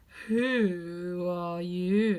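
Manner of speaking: sleepy languid low drawl, Who stretched. Reading the caterpillar finally addressing Alice, in a languid, sleepy voice. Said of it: "addressed her in a languid, sleepy voice".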